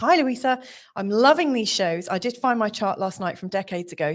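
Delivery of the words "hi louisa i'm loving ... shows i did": usual speaking voice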